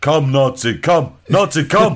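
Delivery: drawn-out, slow, high coaxing call in broken English. Retelling a Tarzan episode, imitating Tarzan luring a Nazi. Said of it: "He goes".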